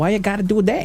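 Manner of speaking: New Jersey accent. After saying an accent wasn't new jersey, the speaker shows a new jersey accent. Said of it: "New Jersey accent is more like".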